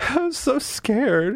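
put-on very high-pitched, tearful sobbing. Retelling a scene where she cries into his chest, imitating someone crying. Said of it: "She literally starts crying".

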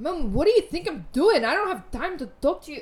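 very loud, high, strong bad fake Scottish accent. Imitating a woman talking to her mom on the phone, in a strong Scottish accent. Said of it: "she gets so Scottish".

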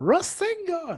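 high, loud, shouted cry. Mocking a character who keeps shouting the same attack: imitating Naruto shouting Rasengan. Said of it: "you sound like Naruto now".

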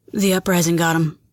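hushed, soft, clipped, terse delivery. Narrator reads the bartender's reply to Ray's question, quiet and clipped. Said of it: "His voice was quiet and clipped".

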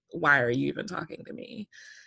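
acted dry, expressionless, flat deadpan delivery. Speaker retelling Lauren answering Heidi at the table, imitating Lauren's deadpan. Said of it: "And Lauren's deadpan".

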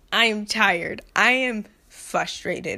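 slow speech through a slight half laugh. Finishing a rant, saying how tired you are, kind of laughing while talking. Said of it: "it sounds like I'm kinda laughing".

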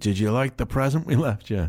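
put-on Northern Irish accent. Retelling a comedian's story, the speaker voices a heckler in a northern irish accent. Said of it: "in a Northern Irish accent and said".

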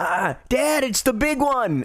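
very high, very drawn-out shouting yell. A father recounts his ten-year-old son calling out during a race, retelling his son's yell. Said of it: "he's yelling at me going".

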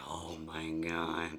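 very low, soft, guttural death metal growl. Retelling her reaction to his question, the speaker answers in a guttural death metal voice. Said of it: "That was like my guttural voice".

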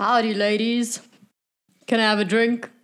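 loud, booming call. Calling out in character on entering a tavern: booming out loudly.

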